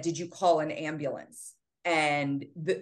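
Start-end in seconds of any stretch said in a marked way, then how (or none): none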